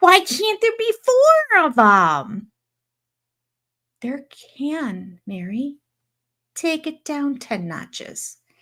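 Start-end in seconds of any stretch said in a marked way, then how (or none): 0.0-2.5 put-on, very pouty, loud, high whine. Retelling how a lady complained right in front of them, imitating a loud pouty complaint. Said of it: "really loudly and very pouty like said".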